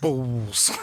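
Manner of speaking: put-on balls said in a strong British accent. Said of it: "did you notice how he says the word balls?".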